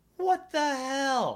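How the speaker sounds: high, slow, stretched "what the hell," incredulous.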